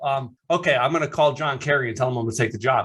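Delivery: ordinary talk, nothing marked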